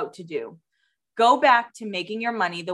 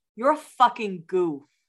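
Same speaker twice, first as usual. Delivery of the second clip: put-on drunk-sounding voice with Boston accent. Imitating a brother while drunk: drunk boston accent. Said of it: "in his Boston accent being like".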